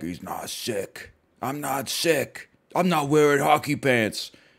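scratchy, rough, gravelly, raspy voice. Retelling his replies to people asking if he is sick, imitating his own gravelly voice. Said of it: "And then me gravelly being like".

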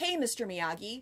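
ordinary delivery

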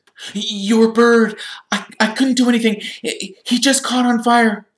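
gasped out. Narrator reading Harry's words to the professor about the burnt bird, gasping. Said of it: "Harry gasped".

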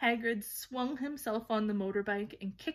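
plain reading voice

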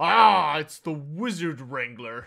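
loud, rumbling put-on dwarf accent. A stocky figure in the crowd picks someone out and speaks from across the way: rumbling accent. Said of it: "a rumbling accent from across the way".

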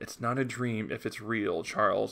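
ordinary delivery

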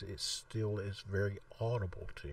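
quiet, very low voice. Showing how compression boosts quiet speech: talking really low. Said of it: "if I'm talking really low like this".

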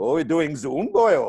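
Welsh accent slipped in suddenly. Quoting lecturer friends, the speaker slips into a put-on Welsh accent. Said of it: "I don't know why I went to a Welsh accent there".

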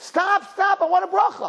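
very high, piercing, shrill scream. Retelling a girl chasing after a wedding guest, imitating someone screaming. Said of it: "So she's screaming".

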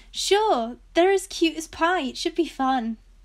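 bright, sunny, upbeat, cheerful tone. Cate answers her brother's question about riding the new ponies, upbeat voice. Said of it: "Cate said in an upbeat voice".

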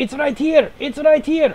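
very high, loud in-character shout. Playing a character calling over the comms during a fight: shouting in character. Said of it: "he also shouts on the comms".

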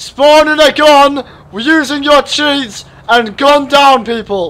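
high, booming, very loud shout. Asked to say it louder, the speaker repeats it: louder. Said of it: "Say that louder".

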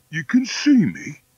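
greatly astonished. The wolf answers Polly, who says she can see him, very much surprised. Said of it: "apparently very much surprised".

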